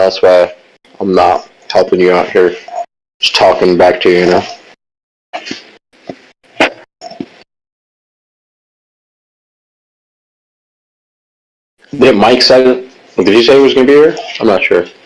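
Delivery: talking with a full mouth while eating. Chatting with another speaker while eating: eating while talking. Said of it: "I'm eating right now".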